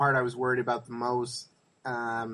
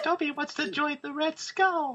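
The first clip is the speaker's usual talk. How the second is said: put-on high little-girl-like voice. Riffing on Dobby, the speaker attempts a failed Dobby impression. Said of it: "You sound like a little girl".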